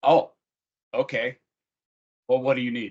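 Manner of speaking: flat, level, emotionless voice. Acting out a manager answering an employee's family emergency: imitating an emotionless reply. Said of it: "there was no emotion".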